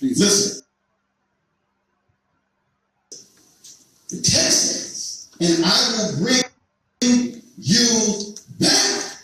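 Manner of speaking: speaking slowly. Reading a text aloud to an audience, speaking slowly. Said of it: "maybe I need to say it slow".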